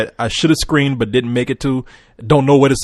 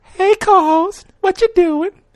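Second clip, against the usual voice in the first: put-on female voice, much higher. Asked by a co-host to do it, the speaker performs a put-on woman's voice. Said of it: "I'll do my woman voice for you".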